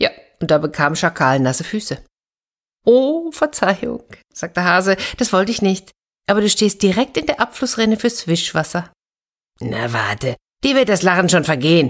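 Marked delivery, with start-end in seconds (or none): 9.6-11.9 growled, snarling. Narrator reads the jackal speaking to the hare, growled. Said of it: "knurrte Schakal".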